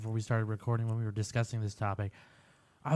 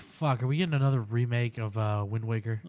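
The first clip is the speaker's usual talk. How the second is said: ordinary talk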